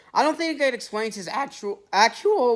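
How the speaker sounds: voice cracking. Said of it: "my voice cracked".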